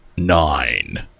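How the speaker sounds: dramatic, deep, drawn-out movie trailer announcer voice. Asked to say the number nine, in a movie trailer voice. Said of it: "you want me to say nine in a movie trailer voice?".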